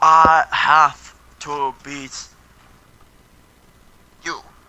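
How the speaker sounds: loud, very slow non-native English, word by word. Imitating a wrestler's promos after noting his problem with English: imitating Shinsuke Nakamura's English. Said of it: "he has a problem with English".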